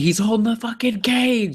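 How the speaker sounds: put-on very high fan scream full of outrage. Retelling yelling at the TV during a fight: retelling own screaming. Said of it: "I was screaming at the T V".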